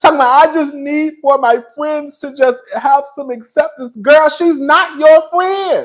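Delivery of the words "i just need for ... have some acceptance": mock crying pleading tone, higher. Retelling a plea at the reunion: imitating someone crying. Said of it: "And you over there crying".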